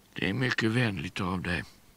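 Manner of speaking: said with a sigh. A man answers his visitor's invitation to a walk, sighing. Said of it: "suckade Dr".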